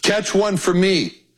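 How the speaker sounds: calling out. Retelling how Carlos called out to the speaker, retelling Carlos's yell. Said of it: "Carlos yells to me".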